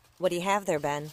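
plain reading voice

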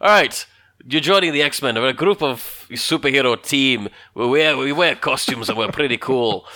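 put-on Scottish-Irish accented speech. Recapping the X-Men recruitment scene, in a weird Scottish-Irish accent. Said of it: "i'm doing a weird scottish irish accent".

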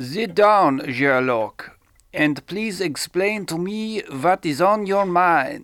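loud, slow, drawn-out, comedy put-on Austrian accent. Playing a character addressing sherlock in a scene, in a put-on accent. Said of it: "I can sort of do the accent, if you'd like".

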